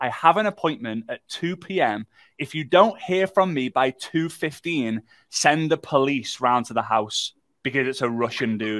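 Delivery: ordinary delivery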